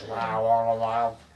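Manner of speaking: scary, eerie, creepy alien voice. Wanting the scary alien voices again, the speaker demonstrates one: scary alien voice. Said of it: "That was a really good impression".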